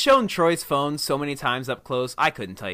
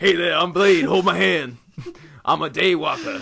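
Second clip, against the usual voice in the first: slow, drawn-out, deliberate put-on voice; 3 semitones higher than usual. Joking about wanting to hold hands: Wesley Snipes impression. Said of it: "your Wesley Snipes impression again".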